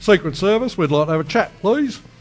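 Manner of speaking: put-on Australian accent. Imagining a Secret Service agent turning up after a threat to the president, Australian accent. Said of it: "That was actually an Australian".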